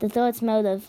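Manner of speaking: ordinary delivery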